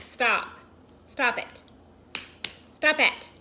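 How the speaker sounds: loud yell with rising pitch. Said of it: "this bee flew in and was like".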